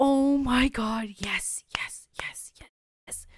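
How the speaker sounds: hushed, excited whisper.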